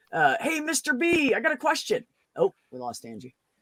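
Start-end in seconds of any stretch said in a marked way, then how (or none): 0.4-2.0 mock raised, shrill, high-pitched loud call. Retelling how a coworker called out across the office: imitating someone saying it loudly. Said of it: "say really r-, loud".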